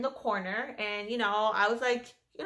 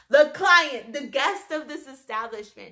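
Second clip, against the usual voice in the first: ordinary talk, nothing marked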